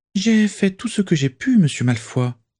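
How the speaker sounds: very high, supplicating, pleading voice. A narrator reads a character's reply to a reproach, in a pleading voice. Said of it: "dit Elsa Toothill d'une voix suppliante".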